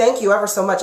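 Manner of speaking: ordinary talk, nothing marked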